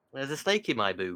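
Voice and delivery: very loud, high, strong northern accent. Showing the others how a line sounds better, in a real northern voice. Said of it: "say it in like a real northern voice".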